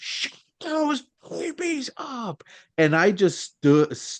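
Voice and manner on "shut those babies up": put-on very high, shrill, screeching teen scream. Retelling how a teenager in the theater yelled at crying babies: imitating a teenager screaming. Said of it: "started screaming".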